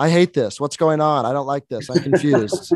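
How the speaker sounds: mock complaining, griping loudly for all to hear. Retelling what a woman in the theater said: imitating someone complaining out loud. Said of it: "vocal, like, telling us, letting us all know".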